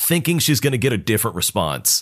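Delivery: ordinary delivery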